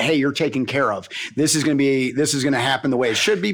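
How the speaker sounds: ordinary delivery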